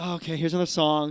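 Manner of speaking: put-on exhausted voice. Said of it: "exhausted after the first song".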